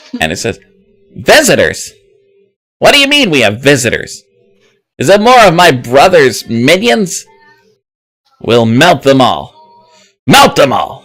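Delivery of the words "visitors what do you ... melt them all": shrill, grating, loud, booming, high-pitched voice. Voicing a character reacting to news of visitors: loud, high-pitched annoying voice. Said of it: "it's a little bit annoying in how high-pitched it is".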